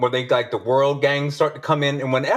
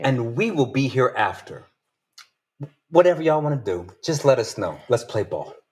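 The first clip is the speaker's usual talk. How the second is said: put-on calm gangster voice, much lower; 2 semitones lower than usual. Paraphrasing what a man said in Chinese, retelling it in a calm gangster tone. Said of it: "I'm going to say it like I'm a gangster".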